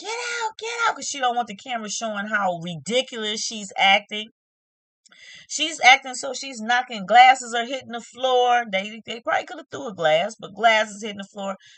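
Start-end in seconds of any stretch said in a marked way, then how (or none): 0.0-1.0 shrill scream at a very high pitch. Retelling a reality show fight, a woman ordering production out: imitating someone screaming. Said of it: "she's screaming like".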